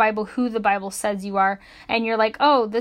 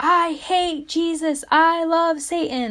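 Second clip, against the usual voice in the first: mock very slow, high, dragged-out scream; 7 semitones higher than usual. Retelling what a lady in a store said: imitating someone screaming loudly. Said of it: "screamed it really loud".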